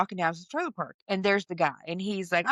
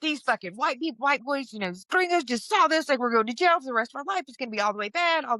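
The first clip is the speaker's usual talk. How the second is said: mock frantic, high, panicked freak-out; 5 semitones higher than usual. Retelling own past words about going to jail: imitating own panicked freak-out. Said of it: "I'm really freaking out".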